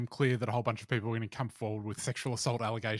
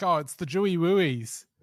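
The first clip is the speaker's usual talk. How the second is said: put-on baby talk, loud and high; 6 semitones higher, 6 dB louder than usual. Mocking how Russell Brand talks now: Russell Brand baby talk impression. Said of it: "all the baby talk stuff".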